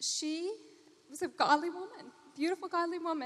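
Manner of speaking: on the verge of tears. Speaker tells a story about their mother's cancer: close to crying. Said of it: "I'm going to cry".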